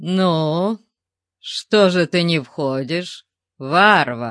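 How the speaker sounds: slow, sneering, jeering, mocking taunt. A huge creature asks the barbarian why he won't come in, mocking. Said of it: "С издевкой в голосе спросило чудовище".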